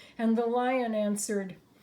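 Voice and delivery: ordinary talk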